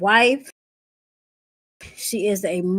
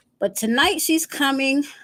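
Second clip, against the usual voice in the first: ordinary delivery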